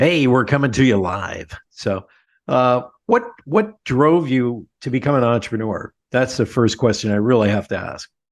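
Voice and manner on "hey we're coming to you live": classic radio broadcast announcer voice. A show host tells his guest about his voice, then does a classic announcer's voice. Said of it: "You have that announcer's voice, that classic".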